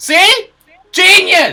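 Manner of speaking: shouting loudly. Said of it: "You hear them shouting".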